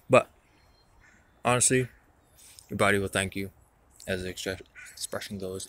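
talking with mouth full. Eating something juicy while talking, speaking with mouth full. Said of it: "Can't talk with these dripping their seeds and sauce and juiciness in my mouth".

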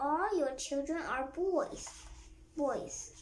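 usual speaking voice

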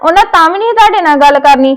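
angry outburst. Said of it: "ਇੰਨਾ ਗੁੱਸੇ 'ਚ ਆਈ ਜਾਣ ਡਏ ਹੋ".

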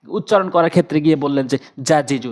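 ordinary talk

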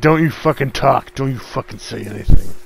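mock-menacing heavy breathing. Retelling their own outburst at someone, mock-menacing with heavy breathing. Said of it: "feeling like a serial killer over a fresh kill".

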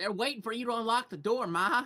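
put-on high, laid-on rural farm-country accent. In a comic scene with crazy farmers outside, speaking to Ma in a farm-country accent. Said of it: "I don't know why they have these accents now".

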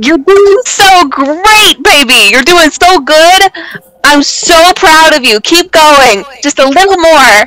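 overly sweet, syrupy, gushing cheering-on tone. Cheering on a climbing party member in character: overly sweet encouragement. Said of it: "cheering on climber in character".

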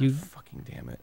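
exasperated. Stuck in a game after walking through fails, exasperated.

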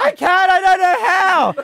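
freaked-out, very high, shrill, very loud panicked yell. Recounting a freaked-out man yelling back at the speaker, retelling a freaked-out yell. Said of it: "He's yelling back at me".

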